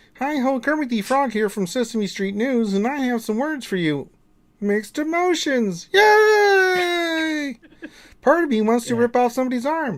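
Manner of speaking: yay stretched out and very high. Answering a viewer's request to speak as Kermit: Kermit the Frog voice. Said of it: "Would Kermit please tell me what he thinks".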